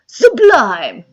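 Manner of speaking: very loud, belted-out single word. Recalling a line from the Barbie movie, imitating Ryan Gosling as Ken. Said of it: "he's just like".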